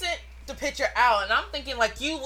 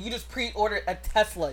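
usual speaking voice

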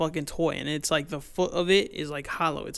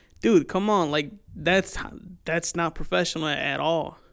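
ordinary talk

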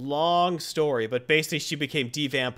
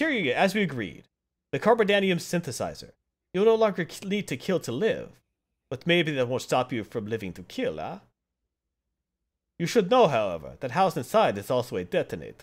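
put-on vampire voice, swooping through the lines; 2 semitones higher than usual. Reading a character's dialogue aloud to listeners, in a Dracula voice. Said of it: "That's my Dracula voice".

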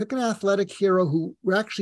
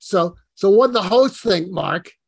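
put-on loud Brooklyn accent laid on thick; 7 dB louder than usual. Retelling someone asking mark what the host thought, thick brooklyn accent. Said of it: "he had this thick Brooklyn accent".

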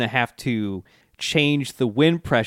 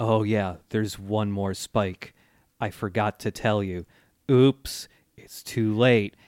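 flat, monotone character voice. Recounting a story scene where Poochie is warned too late; Anasui's monotone deadpan. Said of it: "very monotonous".

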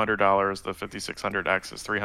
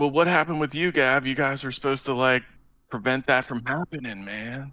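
fast California surfer bro voice, laid-back dude talk; 4 semitones higher than usual. Thanking a donor while playing an assigned role: California surfer bro voice. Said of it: "You are now the surfer bro from California".

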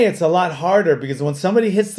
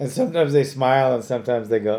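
ordinary delivery

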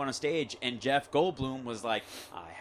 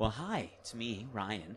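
slow, drawn-out movie-star voice; 3 semitones lower, 6 dB quieter than usual. Retelling greeting a kid in character: Ryan Reynolds voice. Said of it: "I haven't done Ryan Reynolds".

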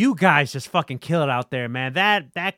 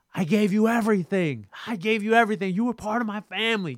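put-on yelling, pitched high; 7 semitones higher, 3 dB quieter than usual. Describing a scene, acting out Roman yelling at Sami Zayn: retelling Roman yelling. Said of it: "Roman is yelling at Sami Zayn".

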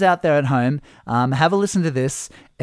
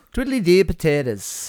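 terrible fake Irish accent; 3 semitones higher than usual. Opening a St. Paddy's Day podcast episode in a terrible Irish accent. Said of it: "that terrible, terrible impersonation".

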